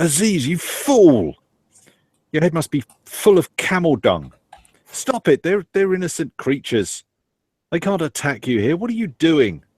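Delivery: very high, furious, angry shouting. Voicing a character yelling at Aziz to stop: Farida yelling angrily. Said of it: "Farida's voice yelling out".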